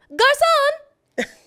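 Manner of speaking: very high, very loud, shrill call. A parent shows the trick taught to a daughter for calling a waiter: really high voice. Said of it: "get your voice to go really high".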